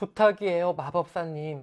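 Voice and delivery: gentle, pleading voice.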